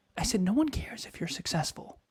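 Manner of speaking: hushed whisper. Speaker talking directly to a listener, whispering. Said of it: "See how I'm whispering?".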